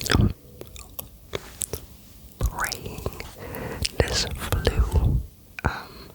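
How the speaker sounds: whispering every word.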